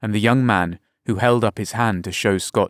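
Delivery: ordinary delivery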